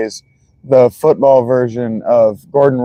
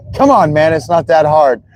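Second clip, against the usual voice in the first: put-on snarky coach voice, pitched higher; 3 semitones higher than usual. Retelling a commercial scene: imitating Tom Brady, snarky. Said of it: "all snarky like that".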